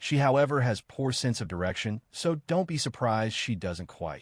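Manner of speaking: normal talking voice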